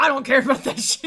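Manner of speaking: mock barked, gruff delivery. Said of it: "And he's like".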